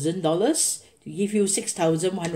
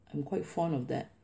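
usual speaking voice

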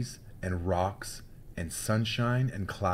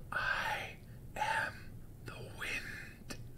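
drawn-out, slow, breathy, hushed whisper. A hidden voice answers a girl asking who it is, whispered. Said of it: "whispered the voice".

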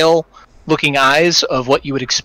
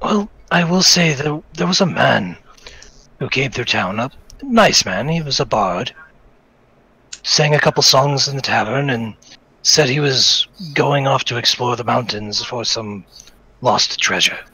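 put-on elderly man speaking. A game master voicing an old villager telling players about a bard, old man voice. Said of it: "old man?".

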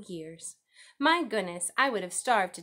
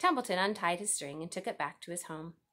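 plain reading voice

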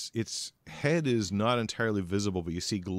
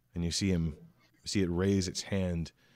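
usual speaking voice

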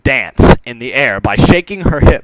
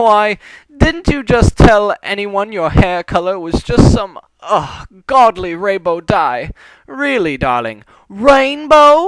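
bad, exaggerated, high, fake posh put-on voice; 9 semitones higher than usual. A pony shakes a stool while badly imitating Rarity's voice. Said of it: "mimicking [name]'s voice".

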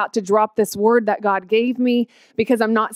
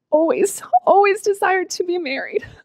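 high, tearful voice crying happy tears; 9 semitones higher than usual. Telling her own story to listeners, crying happy tears. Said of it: "I'm sorry I'm crying because I'm so happy".

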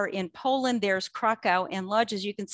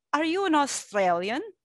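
put-on, pitched-up Polish accent; 5 semitones higher than usual. Retelling what a fellow archivist asked the speaker in the archive, in a polish accent. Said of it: "he says to me in his Polish accent".

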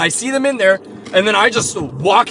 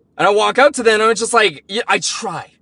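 ordinary talk, nothing marked

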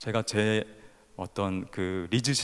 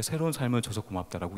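ordinary talk, nothing marked

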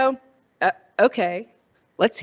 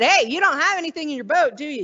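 acted, imitated shout; 3 semitones higher than usual. Speaker retelling a Bible story, acting out Jesus calling to the disciples, retelling a shout. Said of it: "Like he's shouting out".

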